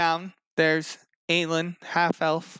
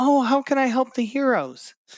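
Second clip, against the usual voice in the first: high, trilling, bubbly, peppy voice; 7 semitones higher than usual. Retelling what a woman said, the speaker does a peppy Bernadette voice. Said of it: "super, super happy, super peppy".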